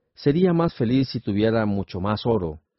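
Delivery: ordinary delivery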